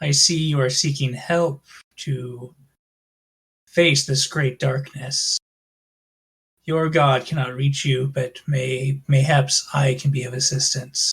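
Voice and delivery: low, slow, sinister dark-entity voice. Voicing a voice in a cleric's head offering help: dark entity voice. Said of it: "You hear a voice in your head go".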